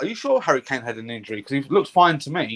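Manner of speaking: usual speaking voice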